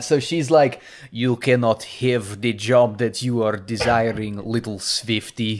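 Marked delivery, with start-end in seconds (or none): 1.1-5.6 clumsy, bad, put-on Russian accent. Retelling a scene where a boss refuses someone a job, in a bad russian accent. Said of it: "an American doing a Russian accent boss".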